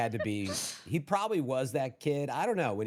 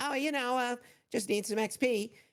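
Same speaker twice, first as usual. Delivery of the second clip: put-on very high little kid voice, about ten years old; 11 semitones higher than usual. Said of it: "basically they sounded ten years old".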